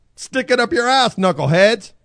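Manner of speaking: full-throated, high screaming rant. Redoing the line after being told to go, screaming.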